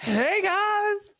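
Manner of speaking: squeaky, very high character voice, popped out. Showing another player Pee-wee's voice. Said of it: "what Pee-wee Herman sounds like".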